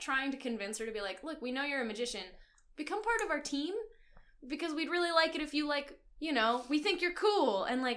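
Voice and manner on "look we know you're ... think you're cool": ordinary talk, nothing marked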